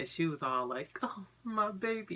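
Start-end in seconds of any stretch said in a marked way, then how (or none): 1.0-2.2 put-on weepy crying, high and tearful. Retelling the mother's reaction to hearing the news: imitating mom crying. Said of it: "and started crying".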